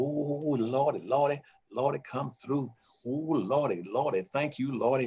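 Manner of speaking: put-on rejoicing shout.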